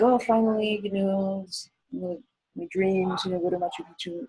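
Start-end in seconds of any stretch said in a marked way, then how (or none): none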